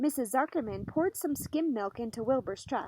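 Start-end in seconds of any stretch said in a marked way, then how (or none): none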